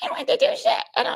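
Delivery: high-pitched, breathy, whispered little voice. Correcting his impression of a man refusing the contract, in a high-pitched voice. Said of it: "He has like a high pitched voice".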